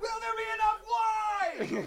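shrieking, very high, very loud, drawn-out scream. Retelling a phone call in a van: imitating someone screaming. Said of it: "Evan is screaming".

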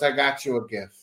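mock serious tone. Telling Steve about a man who brought a gift: mock-serious. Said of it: "He's all serious".

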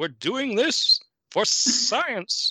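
slow, high, drawn out, whistling every s. Imitating an actor from the film: Arthur Byron whistling-S voice. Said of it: "that's what this guy was like".

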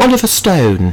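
put-on British accent. Saying a name the way it might sound, British accent. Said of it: "if you say with a British accent".

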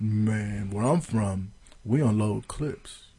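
hushed, very quiet, slow tough-guy gangster murmur. Retelling a player's postgame quote: imitating Josh Norman talking quiet like a gangster. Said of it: "he tried to talk quiet and trying to sound like a gangster".

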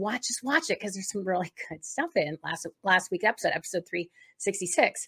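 usual speaking voice

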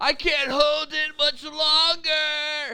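very high, slow, drawn-out, straining yell. Retelling a movie scene, the character straining to hold on: imitating Magneto yelling. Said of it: "he's yelling something like".

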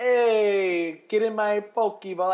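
awful fake Scottish accent, very slow and drawn out. Speaker acts out memes about a woman with an accent, in a bad Scottish accent. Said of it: "that was the worst Scottish accent I've ever done".

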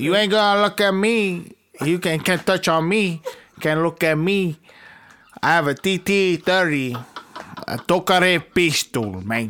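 put-on Cuban accent. Suddenly threatening the others during a card game, in a Scarface-style Cuban accent. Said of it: "I don't know why he just went super Cuban".

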